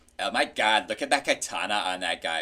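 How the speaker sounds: put-on, exaggerated mincing voice. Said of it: "the mincing".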